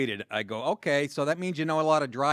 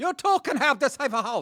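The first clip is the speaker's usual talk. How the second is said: high put-on Chinese accent; 11 semitones higher, 4 dB louder than usual. Speaker acts out a late-night infomercial pitch, in a stereotypical chinese accent. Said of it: "That was a stereotypical Chinese voice".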